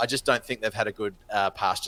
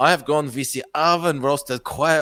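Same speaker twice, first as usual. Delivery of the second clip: loud, put-on, attempted Mexican accent; 5 semitones higher, 5 dB louder than usual. Describing a main course dish of a menu, attempted Mexican accent. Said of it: "I'm gonna stop doing accents".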